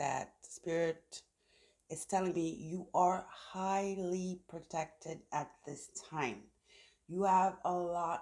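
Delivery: deliberately slowed, careful pacing. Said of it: "I'm gonna have to try to slow down".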